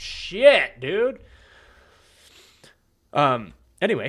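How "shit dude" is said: sudden, high-pitched, very loud full-throated yell. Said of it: "What are you yelling at me about now?".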